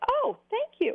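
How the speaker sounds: high, pleased squeal.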